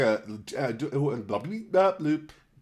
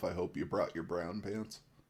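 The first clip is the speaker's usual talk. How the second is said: low, very quiet half-whisper to oneself; 4 semitones lower, 10 dB quieter than usual. Playing a character muttering in a snowstorm caravan: quiet half-whisper to himself. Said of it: "quietly whisper to myself".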